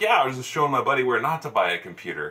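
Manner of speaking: acted playful, teasing, light joking tone. Retelling his answer to a man who asked what he was looking for, retelling own joking tone. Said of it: "I'm saying this all in a joking tone".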